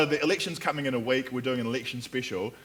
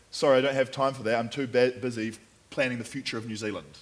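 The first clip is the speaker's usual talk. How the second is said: plain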